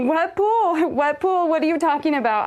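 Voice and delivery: high, repeated, screamed, insistent voice. Retelling a frantic phone call, the speaker screams back at her: retelling a scream. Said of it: "And I started screaming at her".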